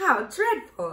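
loud, horrified cry of shock. Dorothy reacts to the hen's account of eating bugs, with a shocked exclamation. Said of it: "exclaimed Dorothy in a shocked voice".

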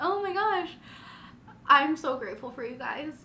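emotional, high, tearful voice, on the verge of tears. Thanking 'you guys' for the last couple years, she is on the verge of tears. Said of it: "I'm gonna cry".

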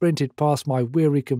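ordinary delivery

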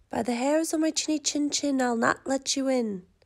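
plain reading voice

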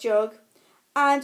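ordinary delivery

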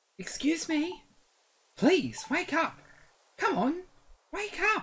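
put-on cat creature voice. Reading game dialogue aloud as the character Skitty, waking someone: Skitty's voice. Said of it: "Apparently that's Skitty's voice".

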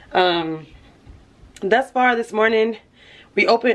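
breathless, puffing, winded, out-of-breath talk. Vlogger wishing viewers Merry Christmas after running up steps, out of breath. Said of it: "I'm out of breath".

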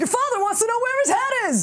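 put-on Long Island accent, very high-pitched. Speaker mocks how every spirit the woman channels sounds like her: imitating her Long Island accent. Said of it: "sounds exactly like her".

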